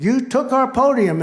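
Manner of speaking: outraged, high-pitched, drawn-out scream. Act out the governor as two guys walk off the stage with the podium, imitating the governor screaming. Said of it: "the governor was screaming".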